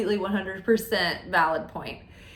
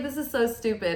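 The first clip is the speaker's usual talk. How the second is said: ordinary talk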